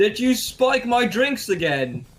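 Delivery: high shout in character voice. Voicing a character who sees the eggs and shouts at Pearl: in-character shout. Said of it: "I shout at Pearl".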